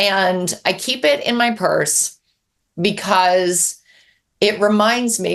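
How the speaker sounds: very slow, halting, breaking, choked-up voice. Telling about a reader's letter kept in a purse, getting emotional. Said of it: "I'm getting emotional".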